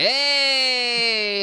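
'hey' in a squeaky, very high-pitched voice. Describing a tiny creature on screen saying hey: very high-pitched 'hey'. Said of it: "in this really high-pitched voice".

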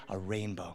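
soft, hushed half-whisper, just audible. Retelling spotting a rainbow from the car: retelling own half-whisper. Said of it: "I whisper just loud enough for".

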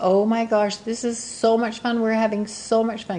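mock thrilled, high, excited, gushing little girl voice. Retelling what a girl by her mom's side said during a call, imitating an excited girl. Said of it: "hear the excitement in her voice".

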